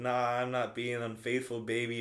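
normal talking voice

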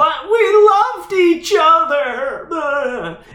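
put-on very high teenage-girl voice, shouted, drawn-out and derisive. Retelling how someone mocked teenage girls, mocking shouted teenage-girl imitation. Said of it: "she would mockingly shout this imitation of teenage girls".

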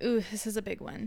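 ordinary delivery

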